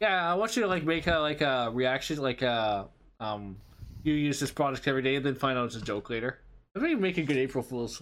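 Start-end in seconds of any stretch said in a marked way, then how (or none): none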